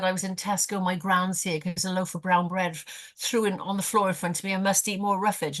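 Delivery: normal talking voice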